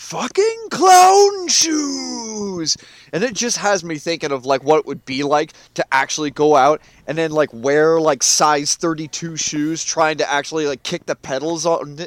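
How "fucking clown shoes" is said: mock scream, much higher, louder, slower. Retelling how a man up the hill yells at drivers, retelling a top-of-lungs scream. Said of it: "he'll just scream out just the top of his lungs".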